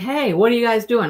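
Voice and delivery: mild put-on calling-out yell. Retelling someone driving by and yelling at the group: imitating someone yelling. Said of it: "they're yelling at us".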